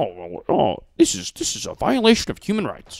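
high, oddly paced cartoon frat-boy voice. Mocking the way Tucker Carlson talks: Tucker Carlson impression with weird pacing. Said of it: "he talks to this".

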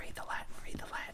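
rushed, fast, hushed, disembodied whisper. Retelling a movie scene where a character hears a voice: imitating a whisper. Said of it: "he hears a whisper that's like".

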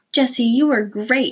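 sounding proud. A family member praises a girl after her audition, proud. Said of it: "Henry said proudly".

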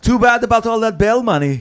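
put-on strongly done Austrian accent, loud and high-pitched. Asked to give the Austrian Smuff line: Austrian accent as Smuff. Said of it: "Give me the Austrian Smuff line. The Austrian Smuff".

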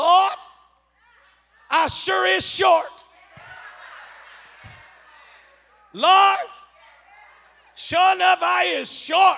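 loud, broad-spoken Eastern Kentucky dialect. Quoting what the speaker said to themselves after meeting wealthy people, Eastern Kentucky accent. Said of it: "I said to myself in my Eastern Kentucky accent".

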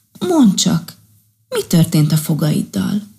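plain

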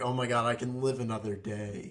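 put-on, overwhelming sense of relief. Retelling a movie scene where the boss laughs at a joke: imitating relieved laughter. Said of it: "the relief, he's like".

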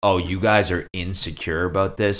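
ordinary talk

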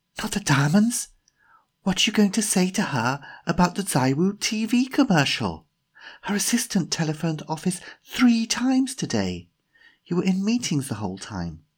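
very high, insistent, pressing voice. Narrator reading Jemima's line to Timothy at a restaurant table, Jemima whispering. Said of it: "because Jemima was the daughter of [name]'s boss, / Jemima put down her menu and looked at Timothy carefully".

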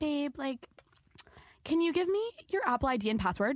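put-on sweet, cute, high little Valley Girl voice. Retelling what Sophia said to a guy she was talking to, imitating Sophia's cute voice. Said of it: "in the cutest voice".

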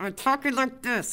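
high, jaw-clamped talking through tightly shut jaw. Showing how speech sounded after an injury: talking with jaw wired shut. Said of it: "I had my mouth wired shut".

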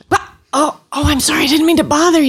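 startled, flustered, very high-pitched freak-out. Retelling a patient's reaction when the doctor answers the phone: imitating a patient freaking out. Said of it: "that's a total freak out".

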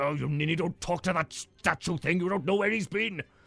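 chiding, scolding tone. Voicing a dwarf chiding his brother away from a statue: chiding. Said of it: "chiding his brother".

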